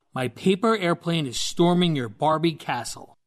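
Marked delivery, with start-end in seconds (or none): none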